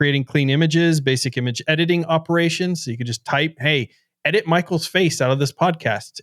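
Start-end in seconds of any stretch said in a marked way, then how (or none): none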